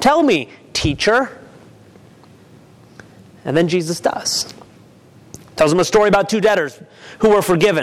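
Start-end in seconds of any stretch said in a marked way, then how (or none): 0.0-1.3 condescending voice dripping with contempt, judgment and disgust. Retelling the story, Simon answers Jesus: acting Simon's condescending disgust. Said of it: "Simon's voice dripping with judgment and condescension and disgust".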